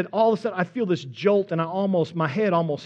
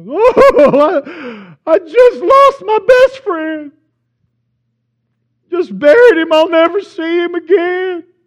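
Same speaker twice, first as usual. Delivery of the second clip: put-on uncontrollable sobbing, very high and very loud; 10 semitones higher, 12 dB louder than usual. Retelling a man answering his buddy's question: imitating uncontrollable crying. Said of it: "just uncontrollably crying".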